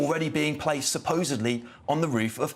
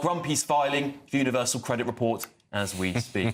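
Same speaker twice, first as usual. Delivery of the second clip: normal talking voice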